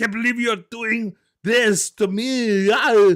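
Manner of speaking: terrible put-on French accent, high and loud. Retelling a man's lines in the worst french impersonation ever. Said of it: "worst in, in, impersonation ever".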